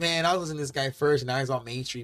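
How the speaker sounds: usual speaking voice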